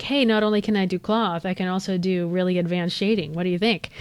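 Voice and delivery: ordinary delivery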